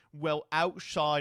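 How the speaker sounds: put-on British accent. Imitating a transphobe's argument: put-on British accent. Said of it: "I'm making the transphobe British".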